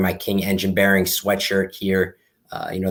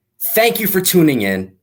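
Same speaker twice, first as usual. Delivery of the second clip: put-on announcer voice, loud and very high; 9 semitones higher, 5 dB louder than usual. Closing out the show for its sponsor: best announcer voice. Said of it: "I'm going to try this in my best announcer voice".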